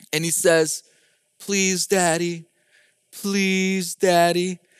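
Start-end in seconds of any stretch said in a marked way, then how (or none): 1.4-4.5 acted gentle, coaxing, sweet pleading tone. Retelling a child's request at the stove: imitating a sweet plea. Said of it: "so sweetly, he looks at me".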